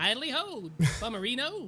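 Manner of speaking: bright cartoonish voice. Joking about a bum mustache that talks, voicing it in a Flanders voice. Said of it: "he talks like the Flanders".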